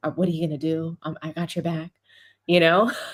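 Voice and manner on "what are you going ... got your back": put-on whisper, much lower. Retelling a courtside moment, imitating someone whispering to LeBron. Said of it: "you see him whispering to LeBron courtside".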